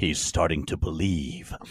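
low, steady, dropped character voice. Retelling how a movie scene sounded to them, in Morpheus voice. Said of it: "And in Morpheus's voice".

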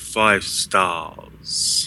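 put-on strong British accent. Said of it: "say it like a real Brit".

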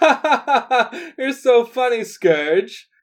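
very high, very loud, exaggerated, drawn-out flirty laugh. Voicing Dara reacting to Scourge: big exaggerated flirty laugh. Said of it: "a big exaggerated".

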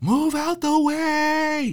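put-on very high, very slow, stretched, shrill scream. Retelling the partner bursting into the hospital: imitating someone screaming. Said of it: "My partner is screaming at the top of his lungs".

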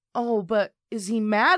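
ordinary talk, nothing marked

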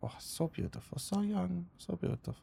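put-on very soft, whispered, breathy matronly older woman voice. Voicing a knitting woman in a rocking chair: matronly character voice.

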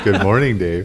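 calm, eerie computer voice. Showing how to make your voice sound like the movie computer, HAL computer voice. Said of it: "make your voice sound like Hal from the movie".

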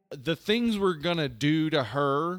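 ordinary delivery

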